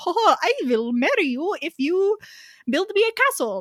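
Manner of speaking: horrible, fake, high-pitched Swedish accent. Retelling what the Swedish council said to the grandfather, in a horrible Swedish accent. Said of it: "That was a horrible Swedish accent".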